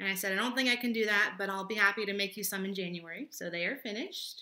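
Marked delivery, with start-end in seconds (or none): none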